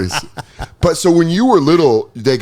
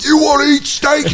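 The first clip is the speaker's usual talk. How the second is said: mock tough sports-parent voice, higher pitch; 13 semitones higher than usual. Retelling what other wrestlers' parents said: imitating a tough wrestling parent. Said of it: "they're like".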